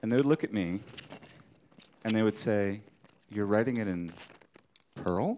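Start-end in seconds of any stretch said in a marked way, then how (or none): 3.3-5.4 acted-out appalled, disgusted, disbelieving tone. Retelling how people reacted on hearing the code language: imitating disgusted disbelief. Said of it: "In much the same tone that one might say, "You shampoo with vomit?"".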